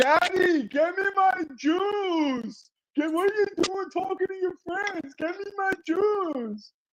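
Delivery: put-on very high child's screech, "juice" drawn out. Retelling daughters begging for juice in the background: imitating kids screaming. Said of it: "You don't hear them screaming in the background".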